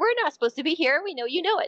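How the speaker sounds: high, mocking, daring, taunting jeer. Recounting what this thing said, imitating a taunting voice. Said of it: "it said it in almost like a taunting kind of fashion".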